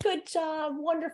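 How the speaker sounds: put-on very high, soft, sweet baby talk. Speaker showing how to praise a baby or puppy, in a really high voice. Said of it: "we go really high like this".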